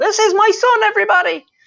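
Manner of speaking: tiny, very high, loud gnome voice, shouting. You hear a voice shout out to everybody; shout in a little gnomish voice. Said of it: "you also hear a little gnomish voice shout out".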